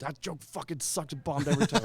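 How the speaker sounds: acted, shrill, very high screaming. You act out Billy's reaction to a joke that kept bombing, in a screaming Billy impression. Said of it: "that's a pretty good impression".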